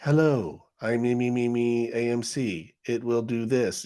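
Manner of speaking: very slow, mechanical robotic speech. Describing a finance news channel's announcement, imitating it: robot voice. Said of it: "that robot voice".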